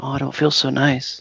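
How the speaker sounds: deflated, beaten, all bravado gone. Retelling how a foe so sure of himself reacts after being hit, mock-deflated. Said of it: "And he was so sure of himself".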